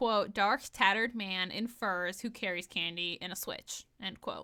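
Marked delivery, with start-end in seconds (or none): none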